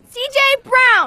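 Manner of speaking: loud yelling. Repeating own name after the teacher asks for louder: yelling. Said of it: "You don't need to yell".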